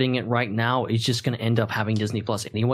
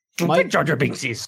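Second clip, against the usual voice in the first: put-on wise old alien voice, higher; 4 semitones higher than usual. Answering a plea not to do Jar Jar: Yoda voice. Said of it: "You can do the Yoda voice all you want".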